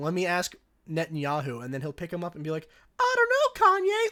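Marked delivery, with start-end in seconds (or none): 3.0-4.1 shrill cartoon dummy voice, very high, loud, drawn out. Retelling a recurring bit where Netanyahu is picked up to answer, in a funny Netanyahu puppet voice. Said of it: "cartoon ventriloquist puppet voice".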